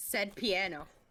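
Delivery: forceful "piano". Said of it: "I like how you say piano".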